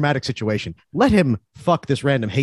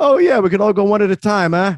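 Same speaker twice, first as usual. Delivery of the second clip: loud put-on Boston accent, pitched up; 6 semitones higher, 5 dB louder than usual. Imagining movie characters planning to kill everyone, in a boston accent. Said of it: "just with their Boston accents".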